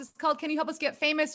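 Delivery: rushed, run-together, rattled off very fast. Guest telling a host the name of their podcast, very fast. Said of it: "You said it so fast".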